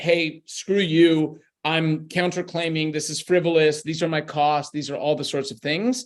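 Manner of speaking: ordinary talk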